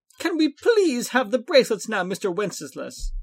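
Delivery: high-pitched, swooping, begging tone. Narrator reads Catan asking Mr. Wenceslas for the bracelets: begging. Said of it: "Catan begged".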